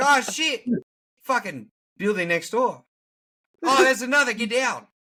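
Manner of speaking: put-on Australian accent, very high and loud. Joking about an Australian going through 9/11: imitating an Australian accent. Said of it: "He's like".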